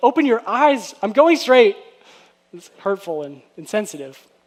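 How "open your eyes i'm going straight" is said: mean, loud, snapping delivery. Demonstrating a driver's reply to a passenger's directions, sounding mean. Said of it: "get mean and say something like".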